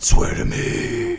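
high, whispered superhero voice.

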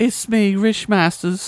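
faked English accent, pitched high. Voicing the sender of an email on request: put-on English accent. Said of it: "let's hear that in an English accent".

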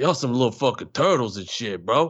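put-on Brooklyn guy voice with Brooklyn accent. Showing an improv character he came up with, Brooklyn guy voice. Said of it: "me doing different Brooklyn guys".

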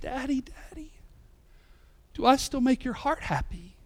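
tearful, crying, pleading voice. Retelling a daughter's question after a talk about lying: imitating a daughter in tears. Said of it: "in her tears".

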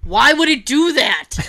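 acted very upset scream. Recounting a movie scene to others, retelling a very upset scream. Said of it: "screams in a very upset voice".

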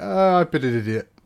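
high, loud, grovelling, apologetic tone. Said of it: "a very grovelly message going".

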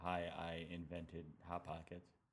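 slow, pleasant, nicer radio broadcast voice. Promoting something when asked to promote: nicer radio tone. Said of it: "Is this a nicer tone to use on the radio?".

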